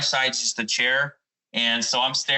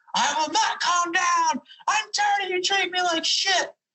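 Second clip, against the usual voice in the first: mock very high, furious, shrieking scream. Retelling a night at a restaurant, imitating someone screaming. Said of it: "we hear some screaming right behind us".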